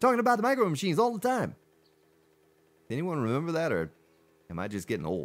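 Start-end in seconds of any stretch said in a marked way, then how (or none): 0.0-1.5 rapid-fire ad announcer talk, pitched higher. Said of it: "the little guy would talk like this".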